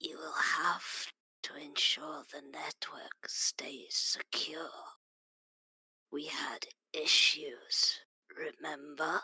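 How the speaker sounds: rasping, raspy, hoarse voice. In a role-play, a grey-clad figure speaks up, raspy voice. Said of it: "a raspy voice from the uh, the grey-clad figure speaks up".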